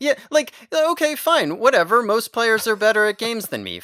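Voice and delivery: offhand, dismissive, high and loud whatever-style tone. Retelling the other speaker's reaction to an argument: imitating the other speaker dismissively. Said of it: "you're over here like".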